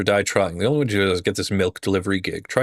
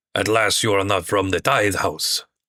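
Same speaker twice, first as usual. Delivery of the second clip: vague, loose put-on French accent. Game master voicing a character who greets the party's cleric: vague put-on accent. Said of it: "I don't know what accent I'm going for".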